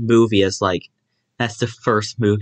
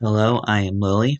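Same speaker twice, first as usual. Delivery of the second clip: talking like a cat. Introducing yourself at the start of the episode, talking like a cat. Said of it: "why are you talking like a cat?".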